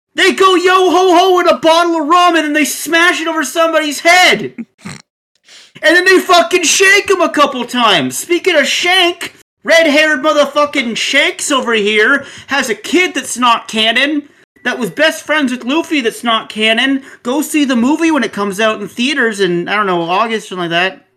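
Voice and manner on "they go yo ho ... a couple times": loud, high-pitched, ranting freak-out. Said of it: "a Lost Village level freak out".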